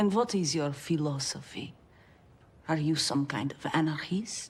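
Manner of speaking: put-on Russian accent. Asking a question as a special guest: Russian accent. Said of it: "it's a great Russian accent".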